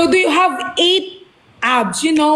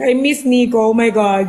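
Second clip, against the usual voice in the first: fake, mock crying and sobbing; 3 semitones lower than usual. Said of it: "I'm crying".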